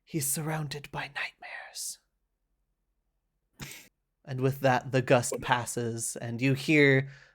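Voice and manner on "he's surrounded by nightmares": soft, hushed whisper, barely audible. Narrating, the storyteller voices a third echoing voice: soft whisper. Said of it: "a third whispers softly".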